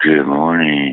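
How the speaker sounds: very low, seductive, sexy voice. A caller greets everyone on the line in his sexy voice. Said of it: "He was calling in his sexy voice".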